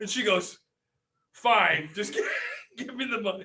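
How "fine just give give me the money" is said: mocking, put-on angry voice. Retelling a woman giving in on a price the speaker haggled down, imitating her angry voice. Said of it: "she's so pissed at me".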